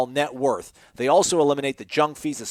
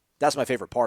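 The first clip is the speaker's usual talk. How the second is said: ordinary delivery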